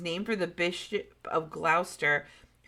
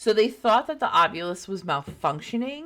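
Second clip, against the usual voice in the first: plain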